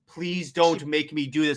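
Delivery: mock heroine-style begging voice. Retelling a comic scene, imitating Wonder Woman begging Superman. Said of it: "she's b-, begging with him".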